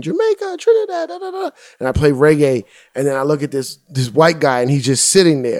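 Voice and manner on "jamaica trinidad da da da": mock very high, excited crowd screaming and yelling. Retelling the crowd shouting their islands: imitating a screaming crowd. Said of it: "people are screaming".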